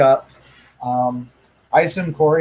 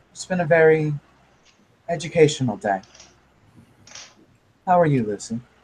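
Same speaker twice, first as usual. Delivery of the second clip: gentle, pleasant, soft, smiling, calm voice. In a role-play scene, a character answers a polite greeting with a soft smile. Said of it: "get a soft smile".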